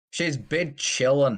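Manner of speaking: put-on Scottish accent. Retelling what she said when told the news: Scottish accent. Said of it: "She says bid chillin' in a Scottish accent".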